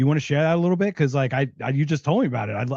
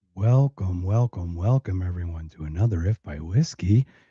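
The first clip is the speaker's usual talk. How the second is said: fake seductive, sexy voice, pitched lower; 8 semitones lower than usual. Welcoming everyone to another episode, put-on sexy voice. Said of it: "Always, always with the sexy voice".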